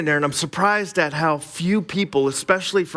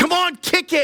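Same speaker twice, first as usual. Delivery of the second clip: mock, very high track-meet cheering yell; 13 semitones higher than usual. Describing what people at cross country races yell: imitating people yelling. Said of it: "they're always yelling".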